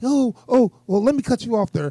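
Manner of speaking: put-on high, mocking voice. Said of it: "talking about some".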